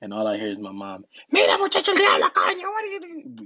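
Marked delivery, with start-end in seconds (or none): 1.3-3.4 very high-pitched, blazing yell. Retelling being caught carrying a water jug, imitating mom yelling. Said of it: "Yelling at me".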